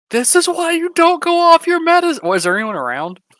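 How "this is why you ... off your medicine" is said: shrill, loud, high-flung exclamation. In a made-up scene, answering a woman's screaming with a loud exclamation. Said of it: "I am going to loudly exclaim".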